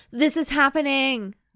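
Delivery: a full-out loud, high yell. Reading a romance story aloud, a line of the narrator's thought: yelling. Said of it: "Who yelled that?".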